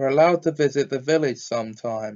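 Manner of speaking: plain reading voice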